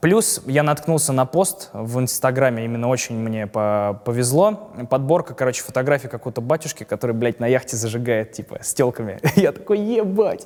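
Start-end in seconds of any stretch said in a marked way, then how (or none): 9.3-10.4 laughing, much higher and slower. Recalling an Instagram post about a priest, the speaker tells his reaction, laughing while speaking. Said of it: "*сквозь смех*".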